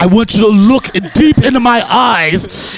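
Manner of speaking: high, slow, loud, drawn-out delivery.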